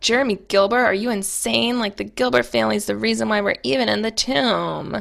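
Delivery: mock fed-up, annoyed voice, tomb stretched out. Recapping a TV episode, acting out Pearl confronting Anna, imitating Pearl sounding annoyed. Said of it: "And it's just like all annoyed".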